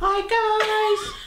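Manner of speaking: very high, goofy, silly voice, "guys" stretched. Told to practice saying hi for the video: stupid silly voice. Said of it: "I knew you were gonna do that stupid voice".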